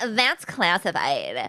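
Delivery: put-on nineties teenage girl voice. Redoing a character's line as the other speaker suggested, Munch as nineties teenage girl. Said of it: "wish she talked like a teenage girl in the nineties".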